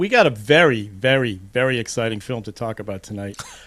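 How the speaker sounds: sarcastic, laid-on, overdone enthusiasm. Introducing the film to talk about tonight, sarcastic. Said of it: "that sounded sarcastic".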